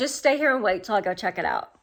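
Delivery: ordinary delivery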